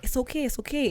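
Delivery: very close, hushed whisper right at the ear. Retelling how a man talked into their ear: imitating someone whispering. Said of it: "whispering my ear".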